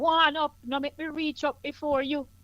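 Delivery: high-pitched, full Jamaican patois. Showing how it sounds when switching into speech: Jamaican patois. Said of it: "That no sound like patois to you?".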